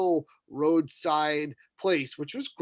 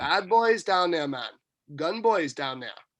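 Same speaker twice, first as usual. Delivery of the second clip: normal talking voice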